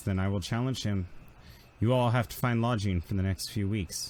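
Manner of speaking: normal talking voice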